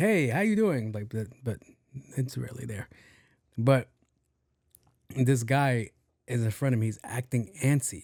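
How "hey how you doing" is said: eager, fired-up and excited, pitched up. Demonstrating how his voice changes when he gets excited, excited voice. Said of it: "When I get excited, this is it".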